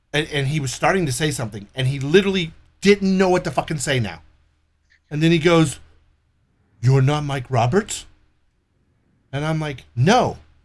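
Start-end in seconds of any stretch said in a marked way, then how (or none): 6.8-8.0 weird fake European foreign accent. Retelling a wrong-number call, quoting the caller in a weird European foreign accent. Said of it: "this weird European foreign fucking voice".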